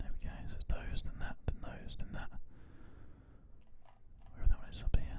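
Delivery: soft ASMR-style whisper.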